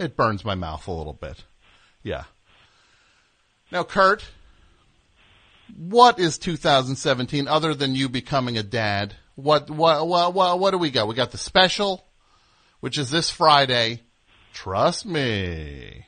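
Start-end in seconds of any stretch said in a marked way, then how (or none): 11.1-15.9 sleazy salesman voice, slow and swooping. Announcing the special this Friday: put-on sleazy used car salesman voice. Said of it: "that was like a used car salesman".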